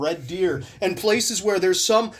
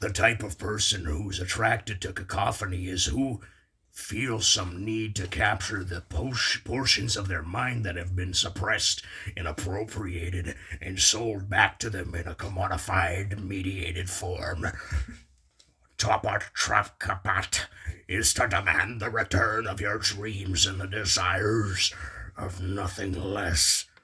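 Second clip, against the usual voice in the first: scary, spooky put-on voice, quieter; 10 semitones lower, 6 dB quieter than usual. Asked during class time to read a quote aloud, doing the scary voice. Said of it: "Do the scary voice".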